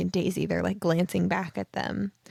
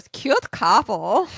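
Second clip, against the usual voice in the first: raised, put-on Russian accent; 3 semitones higher, 8 dB louder than usual. Recounting how the narrator comments on a couple, put-on Russian accent. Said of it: "when she puts on the Russian accent".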